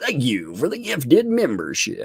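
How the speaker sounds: swooping on-air radio announcer voice. Thanking a viewer for a gifted membership, in a radio voice. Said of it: "Got my radio voice".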